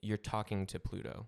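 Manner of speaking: ordinary delivery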